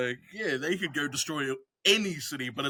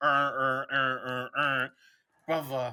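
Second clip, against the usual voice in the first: Baltimore drawl, dragged out very slow; 2 semitones lower than usual. Explaining what the bit needs, demonstrating the Baltimore accent. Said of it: "the Baltimore accent where everything goes".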